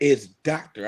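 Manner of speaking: insistent, demanding tone. Retelling how titled people insist on their title: imitating a doctor demanding the title. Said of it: "They be like".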